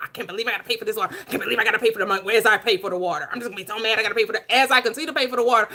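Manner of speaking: aggrieved, mad grumbling griping. Acting out a pointless complaint about paying for water: pretend angry grumbling. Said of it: "so I'm gonna be mad".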